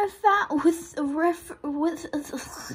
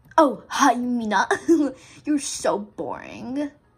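confident sassy put-on voice, lower pitch; 5 semitones lower, 3 dB louder than usual. Asked how Yugo sounds, playing Yugo: confident sassy Yugo voice. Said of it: "He sounds, like, really confident".

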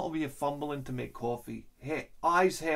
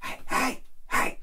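whisper-yell, much higher; 10 semitones higher, 3 dB louder than usual. Retelling how they whisper-yelled at him, whisper-yell. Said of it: "do the whisper yell at him".

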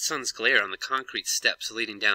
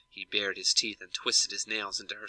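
usual speaking voice

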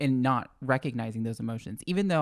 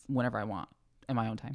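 ordinary delivery

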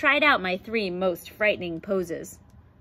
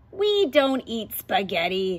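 growling lion voice. Narrator reading a lion answering the narrator's question, growling lion voice. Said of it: "the lion growled".

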